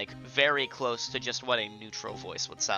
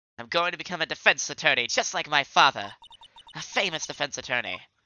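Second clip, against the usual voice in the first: put-on young British voice, higher and louder; 4 semitones higher, 5 dB louder than usual. Recalling Edgeworth talking about his father after a class trial; young British voice for Edgeworth. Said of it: "just a young British voice for him".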